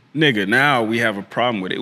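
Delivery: normal talking voice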